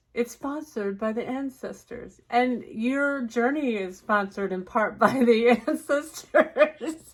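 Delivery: giggling, cracking up mid-sentence, laughing through words. Joking that the video is sponsored by the ancestors, laughing while talking. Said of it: "that really got me going".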